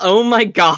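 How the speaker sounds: startled, shocked shout of disbelief. Voicing a character who reads a sister's name in a contract: character yelling in shock. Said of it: "I think he does just yell".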